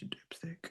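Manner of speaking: soft, unvoiced, mocking, teasing whisper.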